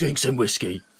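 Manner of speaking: put-on gruff soap-villain voice. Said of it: "like a Phil Mitchell special".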